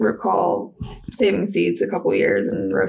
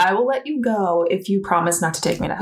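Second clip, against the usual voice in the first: normal talking voice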